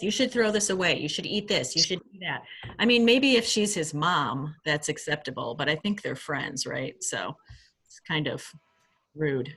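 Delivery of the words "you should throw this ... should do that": imitated bossy tone. Imitating a friend who keeps telling someone what to eat: imitating a bossy friend. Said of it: "She seems kinda bossy".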